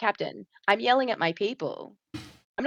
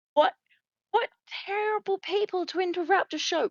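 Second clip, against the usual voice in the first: loud, high-pitched, carrying yell; 10 semitones higher than usual. Shouting in character across a crowd at a show: shouting really loudly. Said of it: "make my way over and shout".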